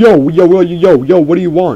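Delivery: put-on very loud, high New York accent. Imitating a guy the speaker played matches with, in a New York accent. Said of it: "so he's like using a New York accent".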